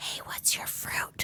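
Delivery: very quiet whisper. Retelling how a classmate asked about the fruit: imitating Amber Jones whispering. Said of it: "whispered to me".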